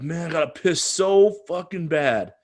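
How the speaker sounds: obnoxious New Yorker voice. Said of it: "being a loud obnoxious New Yorker".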